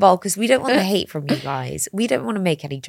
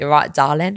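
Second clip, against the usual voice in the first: down-to-earth geezer voice, nothing posh; 3 semitones lower than usual. Comparing how men say darling, the speaker is imitating a geezer. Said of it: "A geezer going to me".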